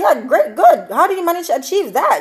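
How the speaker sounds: mock sarcastic, laid on thick. Retelling a talk show host answering a caller: imitating a sarcastic remark. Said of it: "being sarcastic".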